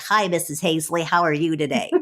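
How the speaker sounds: put-on cartoon-character kid voice, boyish. Speaker imitates seventh grade boys who talked in a cartoonish boy voice. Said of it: "They had these kind of cartoonish voices".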